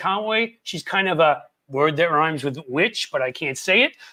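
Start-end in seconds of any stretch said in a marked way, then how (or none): none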